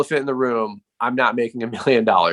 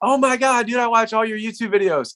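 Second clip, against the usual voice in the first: play-acted, shrieking, excited starstruck fan scream, way up high; 10 semitones higher than usual. Retelling a fan recognizing him at a restaurant: retelling a fan's scream. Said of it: "literally screams".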